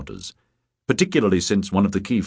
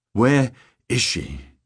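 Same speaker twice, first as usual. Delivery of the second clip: put-on wheezy voice with agitated breathing; 3 semitones higher than usual. Narrator voicing Rickard, who has come to a sudden halt behind someone, wheezing. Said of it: "he wheezed".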